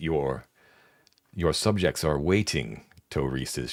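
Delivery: knowing, sly, wry, dry delivery. Voicing a character who welcomes the players in, wry delivery. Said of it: "she says, like, wryly".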